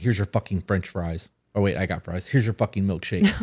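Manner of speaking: pretend angry tone. Advising listeners to calm down before resuming a conversation, acting out returning mock-angry. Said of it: "versus coming back in".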